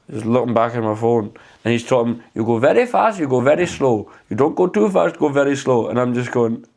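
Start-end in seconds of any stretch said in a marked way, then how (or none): 2.3-5.8 put-on Middle Eastern accent. Retelling what a man on a video kept saying: imitating a Middle Eastern accent. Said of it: "Is a Middle Eastern accent acceptable".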